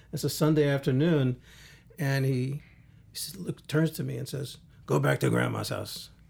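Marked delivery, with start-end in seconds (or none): 4.8-6.0 convincing rough, creaky dad voice. Retelling a father's order to go back to Grandma's house: imitating the father. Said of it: "a very good imitation of my father".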